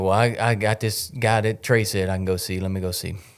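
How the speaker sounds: ordinary talk, nothing marked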